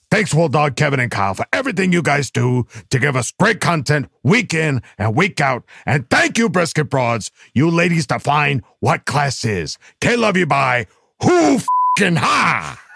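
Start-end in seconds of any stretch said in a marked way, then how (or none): 11.2-12.7 mock high, pumped, fired-up angry tone. Signing off with thanks to supporters, angry. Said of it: "he got angry there".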